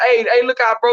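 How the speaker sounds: plain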